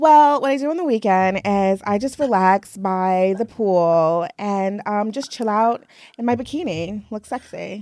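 put-on entitled, demanding, complaining customer voice. In a role-play interview, playing a guest from Long Island, speak-to-your-manager voice. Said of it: "sounds like the let me speak to your manager".

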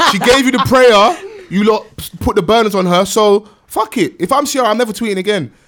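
put-on preacher voice, high, loud, ranting.

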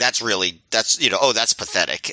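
ordinary talk

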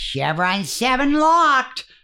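clownish, overblown delivery, high and slow.

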